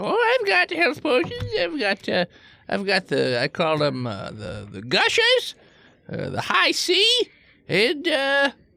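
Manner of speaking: put-on swooping little old lady dwarf voice. Voicing an old dwarf shopkeeper who lists potions: little old lady dwarf voice. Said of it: "there's a little old lady. Dwarf".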